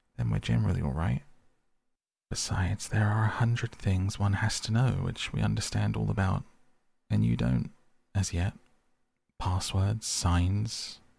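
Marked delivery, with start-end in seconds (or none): none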